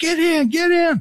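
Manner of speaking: mock very high, urgent scream. Retelling a photographer rolling down his window and screaming to the group, imitating a scream. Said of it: "he screams".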